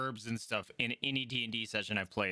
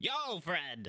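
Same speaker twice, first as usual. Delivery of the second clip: high-pitched gnome voice; 5 semitones higher than usual. Voicing a gnome herbalist greeting a player: gnome voice. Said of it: "obviously a gnome".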